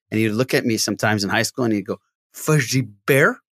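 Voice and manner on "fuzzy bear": spaced-out, zoned-out stoner voice. Remembering a high school stoner, imitating a stoned classmate. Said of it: "he was like a stoner".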